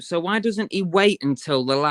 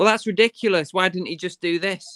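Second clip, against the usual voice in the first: put-on incredulous, exasperated outburst; 3 semitones higher than usual. Recounting what they shouted at the screen while watching: retelling own shouting at screen. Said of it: "I'm shouting at the screen".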